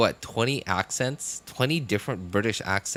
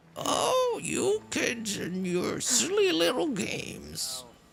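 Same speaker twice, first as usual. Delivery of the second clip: put-on very high, swooping elderly grandma voice. Signing off to viewers, answering as Gramps in an old granny voice. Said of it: "That sounds more like a granny".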